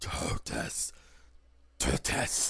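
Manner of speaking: gravelly, cracked voice. A narrator voices several figures replying from the other side: gravelly, cracked voice. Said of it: "in a much more gravelly, cracked voice".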